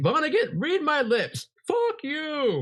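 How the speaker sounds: very high, very slow, swooping, furious yell. Retelling a phone call where Rodney yells at Kurt Vonnegut; retelling Rodney's angry yelling. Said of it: "he's like yelling at him".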